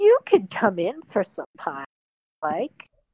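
put-on chuckling old woman character voice, loud and swooping. Narrating a game, voicing an old woman who speaks from behind the players: old woman character voice. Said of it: "a chuckle behind you as this voice just goes".

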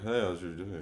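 put-on little-kid voice. Showing how toddlers talk, in a toddler voice. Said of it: "I talk like a toddler".

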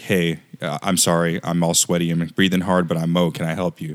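plain

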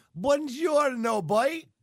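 very high, half French, half Cork accent. Imagining how a Frenchman living in Cork would sound, in a half French, half Cork accent. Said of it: "would they have kind of a half French accent, half Cork accent?".

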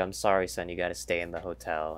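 plain

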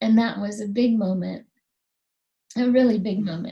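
emotion caught in throat, voice catching. Recalling their father's words about their healing hands, the speaker is choked up. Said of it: "I'm getting choked up".

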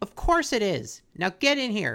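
aggressive, commanding, bossy tone. Retelling a cartoon scene, imitating Miss Piggy, aggressive. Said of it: "Ooh, Piggy's aggressive".

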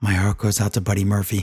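mock whisper, quiet and low. Retelling a favorite moment from Raw, imitating MVP whispering. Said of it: "He whispers into the microphone".

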